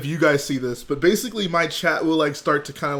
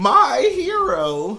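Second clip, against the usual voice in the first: high, put-on cartoon character voice; 9 semitones higher, 4 dB louder than usual. Thanking Lego Soldier in his Olive Oyl voice. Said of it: "in my olive oil voice".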